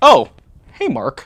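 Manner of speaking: sudden, instant switch to a casual tone. Showing how a movie character switches from outrage: Tommy Wiseau impression, casual greeting. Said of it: "a burst of outrage into, like".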